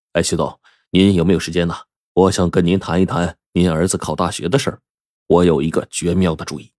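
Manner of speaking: usual speaking voice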